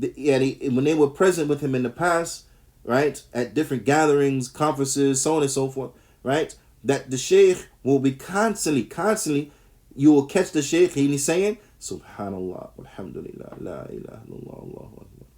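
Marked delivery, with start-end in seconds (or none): 11.8-15.3 very hushed, soft, light whisper. Speaker describes the Sheikh constantly making dhikr at gatherings; bin Baz's very low, light voice. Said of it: "Like this, in a very, very, yani, light uh voice, very low voice".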